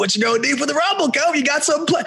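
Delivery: high, quick, eager voice.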